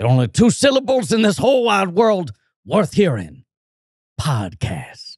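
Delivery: put-on drawling Southern accent. Doing a movie speech to Mr. Sims on a podcast, as a Southern-sounding Al Pacino impression. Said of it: "Why is your Pacino Southern?".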